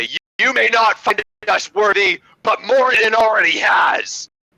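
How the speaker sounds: put-on high call-out. Voicing a character who holds up a gifted hammer: calling out in character. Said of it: "I'm gonna call out, uh, in Dwarven".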